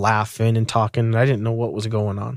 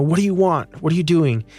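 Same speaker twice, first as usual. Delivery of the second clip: held-back scolding, then mock screaming, high pitch; 5 semitones higher than usual. Retelling how an officer confronted his wife in the road: imitating someone screaming. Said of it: "goes up to her screaming at her".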